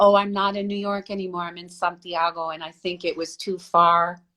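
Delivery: plain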